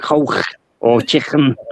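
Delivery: hard K sound in Liverpool accent. Showing how to say K sounds in a Scouse accent: Scouse K sound. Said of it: "when you come to your K's, you've gotta go".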